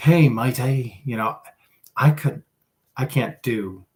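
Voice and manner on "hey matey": loud, failed attempt at an Australian accent. Recalling trying out accents that did not work, attempted Australian accent. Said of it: "then I tried Australian".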